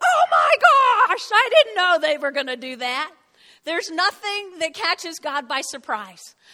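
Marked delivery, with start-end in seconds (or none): 0.0-3.1 high-pitched, loud, startled gasp. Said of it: "that God goes".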